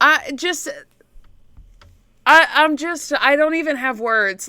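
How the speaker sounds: high, stumbling stammer with broken restarts. Talking about the Dark Ages, the speaker runs out of words: stuttering. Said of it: "now I'm stuttering".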